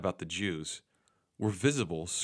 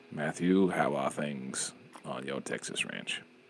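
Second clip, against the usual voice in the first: deep, low film narrator style voice; 6 semitones lower than usual. Pretending to host and questioning a guest called Matthew McConaughey, do a Morgan Freeman impression. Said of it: "It's not really Morgan Freeman".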